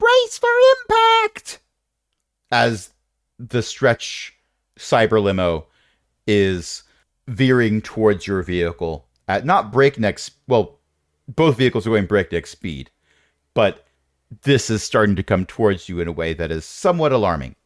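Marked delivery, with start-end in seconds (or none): 0.0-1.6 very high, slow fairy voice yell. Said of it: "you hear one of the fairies yelling".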